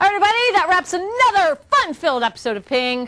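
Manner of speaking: mild, high-pitched half-yell, calling out. Host wrapping up an episode of Ping for everybody: yelling. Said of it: "Sorry, I just yelled at you a little bit".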